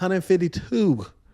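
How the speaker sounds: a little put-on twang. Reading out a receiver's weekly yards stat, with a little twang. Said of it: "with some little twang on".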